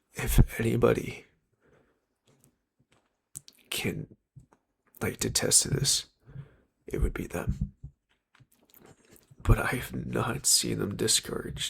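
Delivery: trying not to cry, holding back tears. Speaking about two best friends, trying not to cry: holding back tears. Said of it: "I'm gonna try not to cry".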